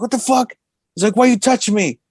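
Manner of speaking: put-on angry outburst. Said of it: "he went off".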